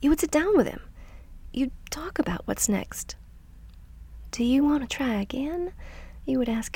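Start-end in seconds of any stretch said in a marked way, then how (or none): 4.3-5.7 high, sweet Southern belle voice. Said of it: "in your sweet little Southern Belle voice".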